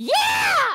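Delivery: booming, very high, very loud, drawn-out bellow. Answering an invitation to meet Willow in character: very loud. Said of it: "that was really loud in my head".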